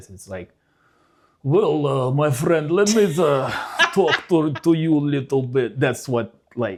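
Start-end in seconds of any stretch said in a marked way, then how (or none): 1.4-5.8 loud fake Russian accent. Showing how Americans think Russians talk in movies: stereotypical movie Russian accent. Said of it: "the way the Americans think that Russian talk".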